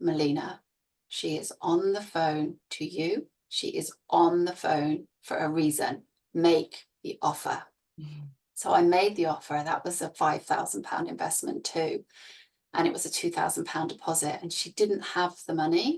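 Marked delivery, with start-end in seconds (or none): none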